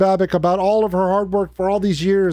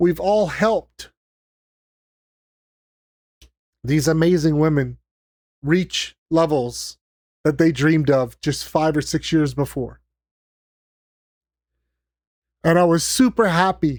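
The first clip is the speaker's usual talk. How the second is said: tearful, crying voice, pitched lower; 3 semitones lower than usual. Thanking supporters who helped, crying while talking. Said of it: "And I'm crying again".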